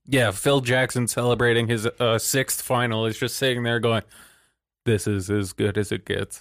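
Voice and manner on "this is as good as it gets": flat, pure monotone throughout. Describing a championship celebration, doing Phil Jackson's monotone. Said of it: "Phil is a pure monotone".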